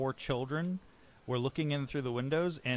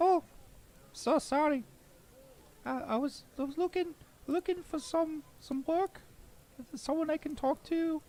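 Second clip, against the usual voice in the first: sharp little shrill piping voice, much higher. Narrator voicing a visitor answering a rude greeting at a door: sharp little shrill voice. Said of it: "You hear like a sharp little shrill".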